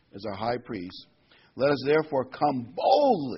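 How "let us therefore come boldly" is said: boldly stressed and said louder. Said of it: "I like to just emphasize that word boldly".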